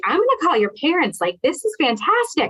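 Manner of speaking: mock thrilled, high, swooping, excited gushing. Retelling telling a student about his growth: imitating own excited gushing. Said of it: "I was gushing".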